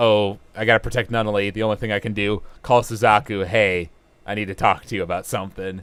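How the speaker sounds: usual speaking voice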